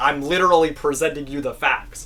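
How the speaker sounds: usual speaking voice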